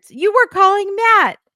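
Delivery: squeaky, very high, fast, rising accusing outburst. Retelling how he confronted someone over phone records, imitating a man's voice getting so high. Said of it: "And his voice gets so high".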